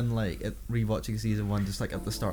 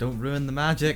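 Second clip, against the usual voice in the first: normal talking voice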